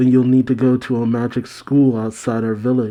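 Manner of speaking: ordinary talk, nothing marked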